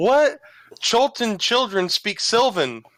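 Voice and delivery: very high, slow, stretched-out, drawn-out yell. Yelling down a well in character at a creature: yelling. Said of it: "I'm yelling".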